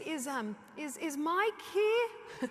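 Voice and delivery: very slow, rising shout. Retelling asking staff for mike when customer service was slow; retelling a yelling voice. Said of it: "I had to use my yelling voice".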